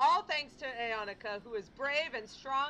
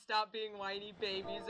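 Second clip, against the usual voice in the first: usual speaking voice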